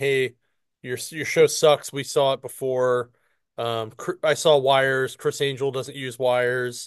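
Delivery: ordinary delivery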